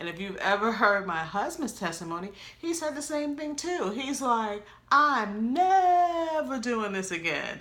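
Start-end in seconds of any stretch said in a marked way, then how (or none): 4.9-7.6 never hit high and loud, slowed down. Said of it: "with the emphasis on never".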